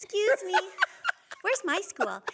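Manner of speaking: put-on high, sing-song little kid voice. Retelling being a child left on a bus, to the driver: little kid voice. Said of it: "you gotta do the kid voice".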